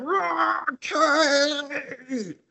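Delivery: acted piercing very high roar, one word stretched long. Retelling a film scene where a character hears gunshots: imitating someone yelling. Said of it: "Scott's yelling 'cause he hears gunshots".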